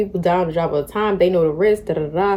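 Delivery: ordinary delivery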